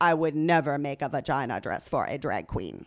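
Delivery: put-on deadpan. The narrator quotes a drag-gown designer's remark, retelling a deadpan line. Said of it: "Or deadpan".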